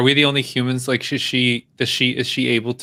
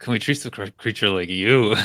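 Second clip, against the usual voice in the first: muttered under the breath, lower; 3 semitones lower than usual. Player in character mutters a retort back at her, under the breath. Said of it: "under my breath".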